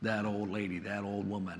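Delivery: mock derogatory muttering under the breath. Retelling how a husband talks about his bride, retelling a derogatory under-breath mutter. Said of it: "under his breath talks derogatory about his bride".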